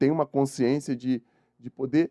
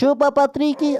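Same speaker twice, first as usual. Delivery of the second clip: squeaky cartoon voice, much higher and louder; 13 semitones higher, 5 dB louder than usual. Repeating the line after first trying it, in SpongeBob voice. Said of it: "na voz do Bob Esponja".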